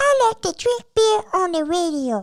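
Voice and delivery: very high puppet-style monster voice. Claiming he can talk like Elmo, the speaker does an Elmo voice. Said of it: "Elmo was to say".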